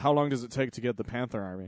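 put-on, mock-nonchalant tone. Speaker retells a question someone asked, mock-nonchalant. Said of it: "Fuchs just nonchalantly goes".

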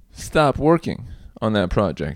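usual speaking voice

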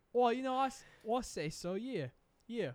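mock, put-on Australian accent. Speaker answering an interviewer's joking question, in a fake australian accent. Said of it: "We got an Australian in the studio".

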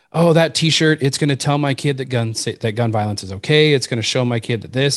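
ordinary delivery

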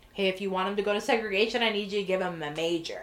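ordinary talk

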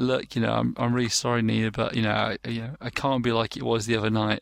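usual speaking voice

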